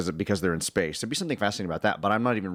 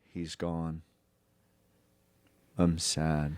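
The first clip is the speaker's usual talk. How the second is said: mock deadpan, flat emotionless monotone, no feeling at all; 3 semitones lower, 4 dB quieter than usual. Discussing a scene where characters lose a monkey, mimicking their reaction: mimicking an emotionless delivery. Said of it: "just no emotion".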